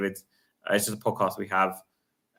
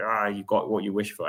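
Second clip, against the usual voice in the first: mock miserable tone. Retelling what an older fan beside him said after a loss: imitating a miserable fan. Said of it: "he was sitting there all miserable, like".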